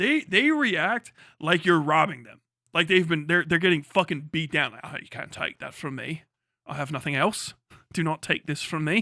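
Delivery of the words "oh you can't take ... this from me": put-on received pronunciation accent. Mocking how British people react when their accent is made fun of, mocking received pronunciation accent. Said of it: "make fun of that stupid received pronunciation accent".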